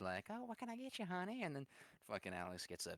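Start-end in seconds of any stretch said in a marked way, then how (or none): 0.3-1.4 very high, sugary, super sweet voice. Retelling how the server greeted them: super sweet server voice. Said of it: "super sweet".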